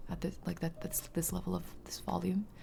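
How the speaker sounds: imitated very quiet speech. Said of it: "'cause he's talking this quietly".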